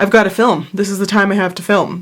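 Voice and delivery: normal talking voice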